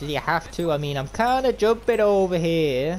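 clumsy, terrible put-on New York accent. Player talking to a teammate during a game, in a terrible new york accent. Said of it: "that was a terrible New York accent right there".

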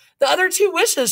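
fast, high-pitched. Narrator voices the old woman answering her husband's question, replying quickly. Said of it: "she replied quickly".

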